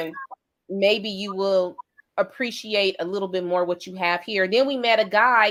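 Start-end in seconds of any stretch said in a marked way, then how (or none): none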